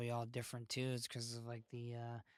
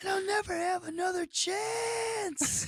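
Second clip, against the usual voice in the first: mock scream, higher and louder; 9 dB louder than usual. Retelling what a boy in the park screamed: imitating someone screaming. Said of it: "he was just screaming at the top of his lungs".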